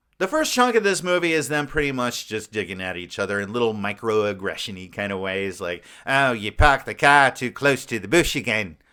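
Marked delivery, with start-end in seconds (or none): 6.1-8.7 bad, crap, fake put-on Australian accent. Acting out a movie couple digging at each other, bad Australian accent. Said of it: "that's my Australian accent. It's pretty crap".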